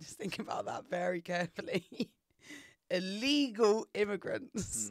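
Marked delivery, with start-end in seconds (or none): 2.9-3.9 leaning hard with heavy stress on the word illegal. Making a point about immigration, stressing the word illegal. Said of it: "Are you emphasizing the word illegal?".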